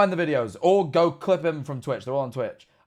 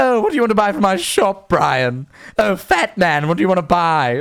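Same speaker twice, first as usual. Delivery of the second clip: loud, raised, snooty, posh toddler cartoon voice; 3 semitones higher, 6 dB louder than usual. Imagining a shop owner greeting his customers: Stewie Griffin voice. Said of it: "he essentially gave the voice of Stewie Griffin".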